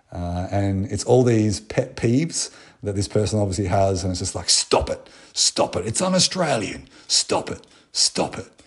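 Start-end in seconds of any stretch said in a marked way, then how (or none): 4.5-8.4 put-on, almost American accent, higher, slower. Act out a video of Prime Minister Scott Morrison, a Scott Morrison impression in an almost American accent. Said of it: "That was almost an American accent".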